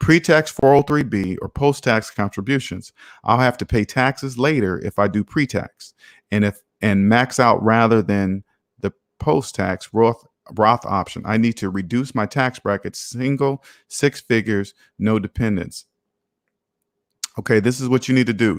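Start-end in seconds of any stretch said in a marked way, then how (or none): 0.0-15.8 careful, slow, deliberate, drawn-out reading aloud. Speaker rereads a tax question aloud so the listener can understand, reading it slower. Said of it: "I'm gonna read this slower".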